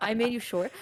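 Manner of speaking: mock deadpan, flat delivery. Retelling a film reply to the diva: imitating Robin Williams deadpan. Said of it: "in the most deadpan".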